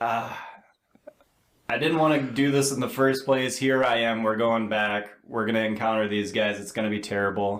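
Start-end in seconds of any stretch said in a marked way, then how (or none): none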